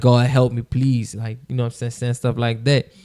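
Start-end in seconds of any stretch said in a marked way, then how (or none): 0.0-1.1 crying voice, much slower. Recounting how they prayed to god back then, retelling a crying plea. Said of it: "crying saying my prayers and like pleading with God".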